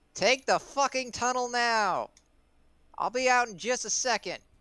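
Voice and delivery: put-on very high, shrill shouted call. Playing a character who yells to a companion to take the tunnel: yelling in character. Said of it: "I'm gonna yell to Clout".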